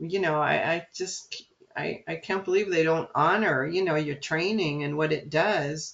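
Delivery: ordinary delivery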